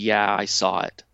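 imitated dejected tone. Retelling a marketing contact's reply on a phone call: imitating a dejected tone. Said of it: "the tone on the phone call was so dejected".

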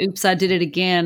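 ordinary delivery

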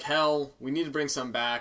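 usual speaking voice

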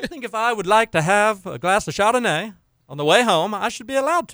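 clumsy put-on British accent. Imitating someone from videos in Britain, bad British accent. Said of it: "not a good British accent".

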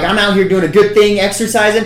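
high, loud, fired-up indignant rant.

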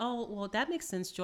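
ordinary delivery

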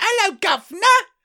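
very high, put-on English girl voice. Acting out an english girl in uniform arriving at a shop: playing an english girl. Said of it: "She comes in and goes".

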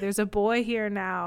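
ordinary delivery

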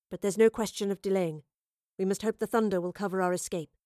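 ordinary talk

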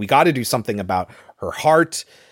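ordinary talk

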